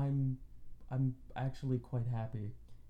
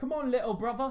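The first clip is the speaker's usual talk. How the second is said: put-on high, raised Cockney accent; 12 semitones higher, 7 dB louder than usual. Describing a game's opening, where Rose asks the player to follow: Rose's Cockney accent. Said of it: "everybody's got the, like, Cockney accent".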